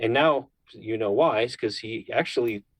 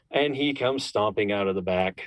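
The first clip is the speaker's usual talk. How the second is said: plain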